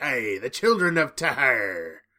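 loud pirate-style voice. Host introducing the second episode's title, in a pirate voice. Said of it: "I sound like a pirate when I say that".

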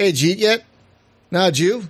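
Philly accent, words mashed. A Philadelphian demonstrating how locals pronounce things, in a Philadelphia accent. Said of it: "We pronounce things a little like".

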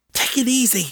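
hissed, pitched very high. After Will jumps at her sideways hug, a woman speaks, hissing. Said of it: "she hissed".

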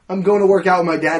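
loud yell.

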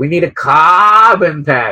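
slow, badly dragged-out delivery. Mocking a call for a carbon tax: terrible Bernie impression. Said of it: "terrible, terrible impression".

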